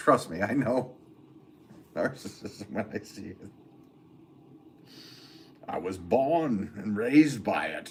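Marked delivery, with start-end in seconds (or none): 5.7-7.9 put-on comic-book villain voice. Answering a chat commenter and agreeing: Bane impression. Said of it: "was that a Bane impression?".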